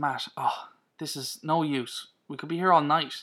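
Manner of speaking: usual speaking voice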